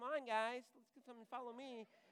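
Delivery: put-on called out like an old biblical epic film. Speaker mocks how vintage videos voiced Jesus, in an old-video Jesus voice. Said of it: "you needed to make the voice for Jesus".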